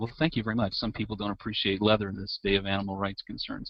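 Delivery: normal talking voice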